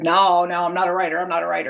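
put-on slow, drawling Southern Utah accent. Retelling a man's answer when asked about writing his story, in a Southern Utah drawl. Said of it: "with that Southern Utah drawl".

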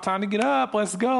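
put-on pleasant, easygoing, nice, friendly tone. Speaker shows how to wake someone who needs to get up, nice voice. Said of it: "like in the nice voice".

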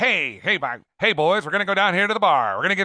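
fake old-movie mid-Atlantic accent. Speaker imitating a guy from old movies, in an old-movie mid-Atlantic accent. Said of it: "They had that mid Atlantic accent".

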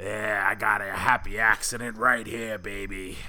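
low-pitched cartoon TV clown character voice. Describing an imagined scene to a co-host, doing a Krusty the Clown voice. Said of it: "I love the voice work this week".

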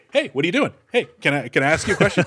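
pushy, pestering, flirty come-on tone. Picturing a stranger interrupting women agents on a mission: pretend guy chatting up a woman. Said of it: "it's some guy just like".

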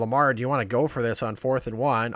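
plain

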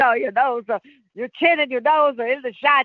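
put-on Dutch accent. Retelling what Jan said to her about her shot, imitating Jan's Dutch accent. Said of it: "Jan in his Dutch accent".

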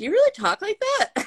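high, disbelieving tone.

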